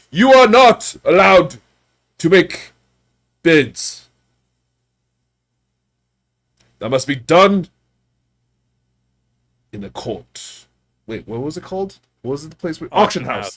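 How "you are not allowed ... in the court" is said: very loud, slow, drawn-out yell. A guard yells at a man selling goods in the street, yelling guard. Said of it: "one of the guards kind of yells at him".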